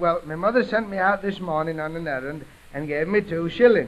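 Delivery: ordinary delivery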